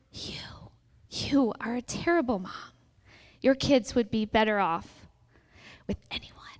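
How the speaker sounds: soft, breathy whisper under the breath. A narrator reads the words she whispers to a mom, whispering. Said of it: "She whispers".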